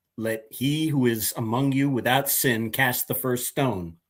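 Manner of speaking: ordinary talk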